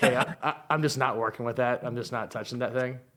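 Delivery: ordinary delivery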